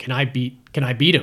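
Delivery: ordinary talk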